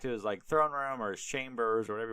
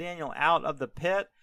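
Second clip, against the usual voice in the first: ordinary talk, nothing marked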